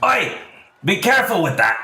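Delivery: very high, swooping, shouted dwarf-like yell. A blonde dwarf yells across a short counter at someone touching everything: Ein shouting. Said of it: "He shouts from across the short counter".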